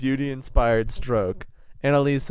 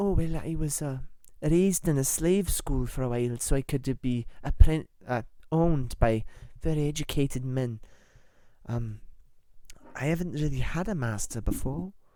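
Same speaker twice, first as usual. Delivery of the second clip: spirited, fiery, put-on Scottish accent; 3 semitones higher than usual. Improvised role-play, answering an interviewer's question; Rita's Scottish accent. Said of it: "fiery Scottish redhead".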